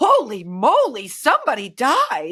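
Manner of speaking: put-on very slow, swooping, old-timey fifties kid voice. Retelling a kid's reaction to a smelly bathroom: like a 1950s kid. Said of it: "like he's a nineteen fifties kid".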